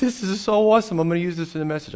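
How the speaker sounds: mock hysterical screaming, high-pitched, worked-up excitement. Speaker recounts her own reaction in the car, retelling a hysterical scream. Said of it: "I'm screaming. I'm hysterical".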